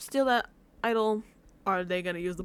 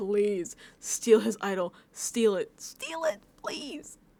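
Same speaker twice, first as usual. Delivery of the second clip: acted, repeated, drawn-out, swooping pleading voice. Acting out a wish that a player steals an idol: put-on begging.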